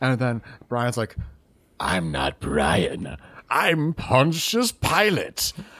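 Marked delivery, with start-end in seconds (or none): 1.8-5.5 very slow, drawn-out voice swooping up and down. Acting out a made-up movie scene as Pontius Pilate: Pontius Pilate voice. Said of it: "he sounds just like that, by the way".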